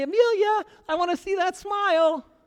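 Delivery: put-on goofy, silly, loud grandpa voice, pitched way up. A grandfather acting out how he talks to his granddaughter; silly voice. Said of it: "talk silly to her and say".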